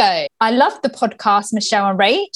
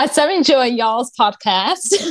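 put-on American accent. Repeating what someone said about the podcast, in an American accent. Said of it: "An American accent".

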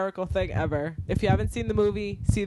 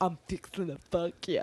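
put-on nervous, pumped-up voice, quieter; 4 dB quieter than usual. Retelling a movie scene where Paul Rudd hypes himself up in the mirror: Paul Rudd impression. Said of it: "and he's just like".

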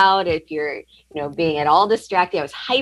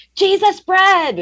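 put-on very high, loud toddler shout of delight; 5 dB louder than usual. Retelling their two-year-old daughter at mass during the consecration, imitating her yelling out. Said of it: "she just yelled out".

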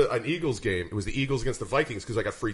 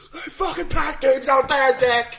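very high, shrill, loud jeering scream; 7 dB louder than usual. Recalling fans yelling at a Phillies player during games: retelling screaming at a player. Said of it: "screaming at him".

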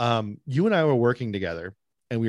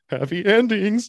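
put-on, very high, loud, giddy, giggling voice; 10 semitones higher, 6 dB louder than usual. Retelling the other speaker's recorded dare line, imitating a giggly happy tone. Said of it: "you're so happy".

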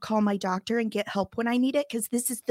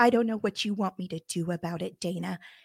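imitated cold tone; 3 semitones lower than usual. Retelling what the doctor said when asked for help: imitating a doctor's cold tone. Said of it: "and you're so cold".

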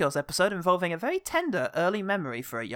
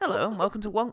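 overly posh, upper-class, high-society delivery; 3 semitones higher than usual. Retrying a show's opening greeting, in an overly high-society voice. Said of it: "That was a bit too high society".

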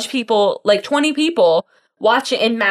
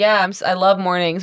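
put-on flat, deadpan delivery; 2 semitones lower than usual. Retelling his reply the next morning, retelling a deadpan line.

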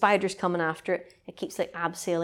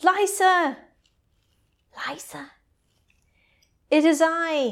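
mock very high, loud calling-out cry; 10 semitones higher, 5 dB louder than usual. Recounting a scene where a man calls out to a woman, retelling a shout. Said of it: "And he shouts".

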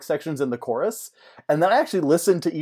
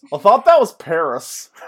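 put-on mouth-full-of-chips voice, higher and louder; 4 semitones higher, 9 dB louder than usual. Retelling a scene, quoting a character: imitating Sam with mouth full of chips. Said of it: "Sam with a mouthful of chips".

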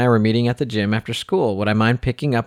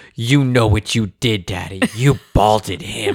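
play-acted cross, angry little girl scolding. A father retells his three-year-old daughter scolding him at breakfast: imitating Avery's angry scolding. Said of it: "she was so mad".

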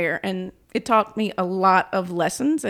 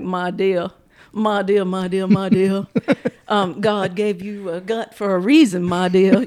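animated rooster voice; 4 dB louder than usual. Retelling advice a senator gave on the phone: Foghorn Leghorn voice. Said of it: "Foghorn Leghorn voice".

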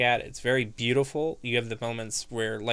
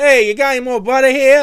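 put-on Italian accent, very high, shrill, booming and loud; 14 semitones higher, 16 dB louder than usual. Imitating how another speaker talked during a long session, in a fake italian accent. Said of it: "You started talking in a fake Italian accent".

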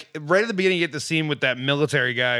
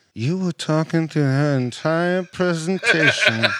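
menacing, understated, reprimanding tone. Recounting a scene where a man walks up to James Franco, imitating quiet menace. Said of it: "so quietly and so menacingly".

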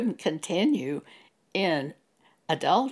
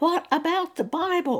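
high-pitched, yelled, protesting tone; 11 semitones higher than usual. Retelling a reaction to the Pope on TV news: retelling a scream. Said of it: "I screamed at the television".

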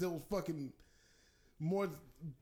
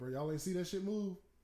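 usual speaking voice

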